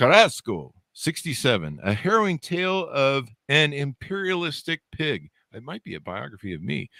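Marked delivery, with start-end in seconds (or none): 0.0-1.8 put-on, attempted Spanish accent. Host introducing a guest's new book title, trying it in a Spanish accent. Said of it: "try and say this with a Spanish accent".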